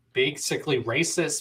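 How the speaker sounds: ordinary talk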